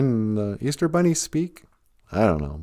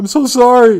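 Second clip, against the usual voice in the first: very high, loud fake sobbing; 12 semitones higher, 7 dB louder than usual. Retelling what a dad said to his four-year-old on Easter morning, imitating fake crying. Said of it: "He's fake crying".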